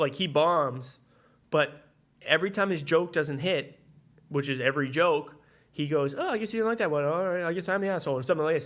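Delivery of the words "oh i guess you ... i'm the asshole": quick, self-mocking, dismissive tone, put-on. Retelling how a guy reacts when every joke bombs; imitating him playing it off. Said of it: "Like he plays it off".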